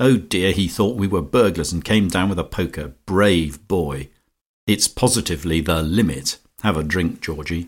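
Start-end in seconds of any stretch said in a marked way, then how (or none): none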